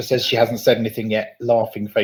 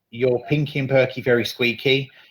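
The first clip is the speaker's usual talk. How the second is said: ordinary talk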